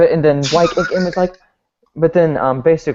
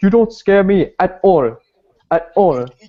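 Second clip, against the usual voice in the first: mock badly dubbed delivery, higher; 5 semitones higher than usual. Retelling a scene from a badly dubbed movie: imitating bad movie dubbing.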